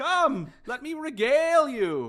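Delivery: very high, very loud, showy, precocious halfling voice. Voicing a halfling writer who is greeted by name: loud precocious halfling voice. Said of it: "whose voice is very precocious and loud".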